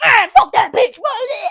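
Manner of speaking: very high, very loud, shrill, furious scream. Retelling an ex on the phone: imitating someone screaming angrily. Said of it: "she's screaming on the phone".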